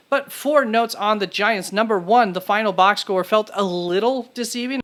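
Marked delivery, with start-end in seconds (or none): 2.3-4.8 stress placed on the word little. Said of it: "Stress the word little there".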